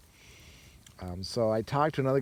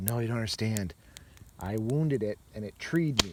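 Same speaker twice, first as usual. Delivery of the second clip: plain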